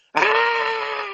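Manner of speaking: sudden, high-pitched screaming shriek.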